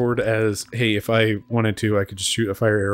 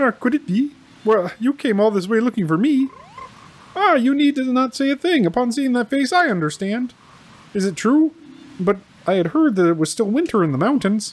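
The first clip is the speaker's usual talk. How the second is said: very high-pitched frog character voice; 14 semitones higher than usual. Speaker voices a frog character greeting a visitor, Kermit the Frog voice. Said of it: "Why come up with a frog voice".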